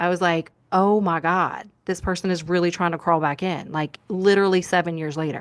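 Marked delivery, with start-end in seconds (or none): 0.7-3.7 imitated, panicked reaction. Retelling an ex following on Instagram: imitating own panicked reaction.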